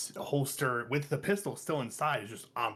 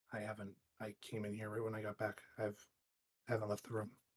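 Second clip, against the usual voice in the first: very quiet, hushed, barely audible speech; 3 semitones lower, 10 dB quieter than usual. Answering a question about drinking water, talking very quietly. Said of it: "you are talking very quietly".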